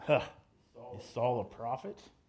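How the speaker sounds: low, swooping, mocking sarcastic tone. Retelling what people said when they looked at saul: retold sarcastic remark. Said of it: "with a sarcastic tone".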